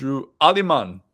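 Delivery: loud attempted Cajun accent drifting into Jamaican. Asked for his best cajun pronunciation of a name, attempting a cajun accent. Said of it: "give me your best Cajun pronunciation of that one... say it more Jamaican than Cajun".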